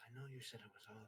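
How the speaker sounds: whispered aside. Announcing an aside to another player, the speaker whispers: whispering. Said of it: "I'm gonna whisper over".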